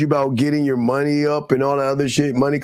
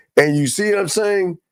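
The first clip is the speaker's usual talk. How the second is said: usual speaking voice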